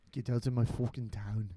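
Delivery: put-on Irish-sounding voice, Irish accent. Chatting with friends about movies, the speaker repeats a line in an irish accent. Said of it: "It sounds like you're Irish still".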